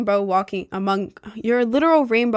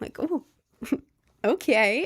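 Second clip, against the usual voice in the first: plain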